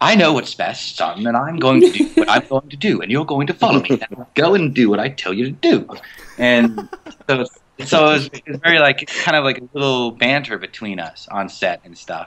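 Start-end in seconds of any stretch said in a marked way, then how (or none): 0.0-5.9 snobby, condescending know-it-all voice. Imitating Haytham giving orders to his son: snobby Haytham voice. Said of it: "He kind of feels a little snobby, like he's just knows it all".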